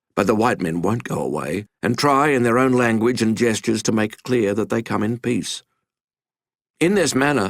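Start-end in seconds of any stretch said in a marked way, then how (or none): none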